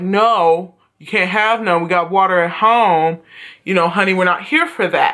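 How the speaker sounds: put-on very sweet, sugary, honeyed motherly voice. Retelling a mother refusing her son in a store: imitating a mother speaking sweetly. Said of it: "she said it to him very sweet".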